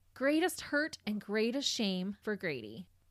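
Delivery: normal talking voice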